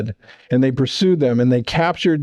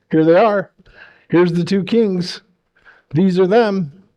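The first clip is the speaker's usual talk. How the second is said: high, mocking, taunting jeering voice; 5 semitones higher than usual. Retelling how the leader showed off the two captured kings: imitating a taunting tone. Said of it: "he was taunting them".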